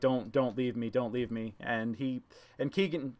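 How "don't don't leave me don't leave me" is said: mock sobbing, pleading tone. Retelling a scene, the speaker imitates a man crying and pleading. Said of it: "just crying like".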